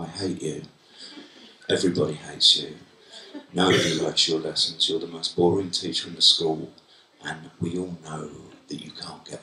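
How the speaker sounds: very low, hushed mutter under the breath. Retelling students muttering at their teacher, imitating someone muttering. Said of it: "muttering under their breath".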